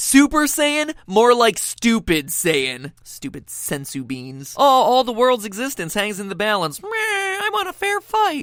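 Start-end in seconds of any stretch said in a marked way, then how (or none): 3.0-4.5 barely audible, very hushed, muttered whispered aside. Video narrator making fun of Dragon Ball, acting out a whisper.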